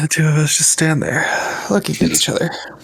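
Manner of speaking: high voice talking through a stretch. Reading a line aloud to the others while stretching: said while stretching. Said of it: "Why do you say it like that?".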